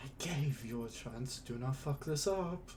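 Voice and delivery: menacing, threatening, hushed half-whisper. Narrating a scene, he voices a figure pushing two others toward a staircase, half-whispering. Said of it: "as he whispers in".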